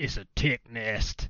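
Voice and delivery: put-on good, convincing cowboy accent. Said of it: "That's a good, that was a good accent".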